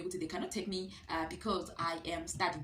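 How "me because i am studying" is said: normal talking voice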